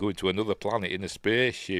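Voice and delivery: ordinary talk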